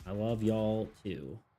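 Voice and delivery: very dry, deadpan delivery. Answering viewers who say they love you back: very dry tone. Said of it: "I say in a very dry tone".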